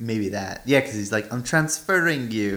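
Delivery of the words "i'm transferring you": imitated, mock Irish accent. Discussing where a movie is set, one speaker quotes a character: imitating an irish accent. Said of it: "That's Irish".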